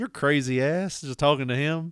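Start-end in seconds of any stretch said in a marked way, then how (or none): 0.0-1.0 put-on joking manner. Speaker retells his wife teasing him, imitating a joking tone.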